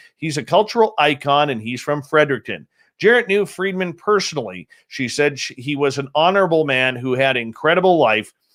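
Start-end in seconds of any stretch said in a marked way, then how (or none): none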